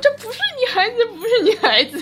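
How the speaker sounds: very high, shrill, loud, desperate screaming. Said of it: "舒淇就大叫".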